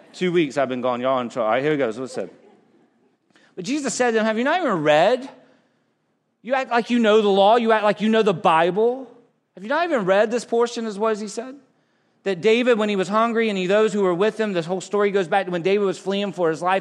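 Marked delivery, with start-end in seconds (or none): 4.3-10.9 sarcastic, dry delivery. Retelling Jesus answering the Pharisees, imitating sarcastic Jesus. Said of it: "I love that Jesus is sarcastic".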